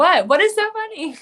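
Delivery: put-on bewildered tone. Imagining answering laughing fighters: imitating her own confused reply. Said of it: "They would all look at me like I'm".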